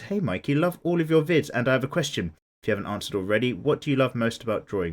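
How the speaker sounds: ordinary talk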